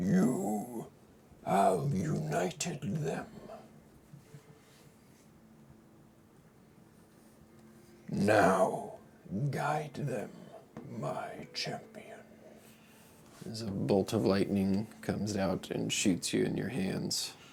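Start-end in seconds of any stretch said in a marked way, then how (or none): 0.0-12.2 resounding godlike voice, booming, high and drawn out. Narrating a game scene as an unseen voice addresses the player: booming voice. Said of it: "You hear a booming voice".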